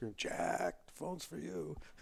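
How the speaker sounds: shrill, rough, very high-pitched holler. Retelling how a man at a bar called someone to the phone, retelling a scream. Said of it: "I hear the guy scream".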